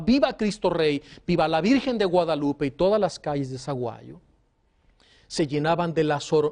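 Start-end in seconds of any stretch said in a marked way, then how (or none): none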